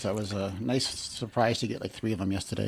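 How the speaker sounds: sarcastic tone. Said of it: "you're being sarcastic at the moment".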